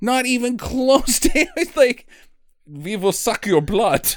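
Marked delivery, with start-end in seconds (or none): 2.7-4.1 mock, put-on Eastern European accent. Mocking a movie character's accent, doing an eastern european accent. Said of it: "accent is Eastern European".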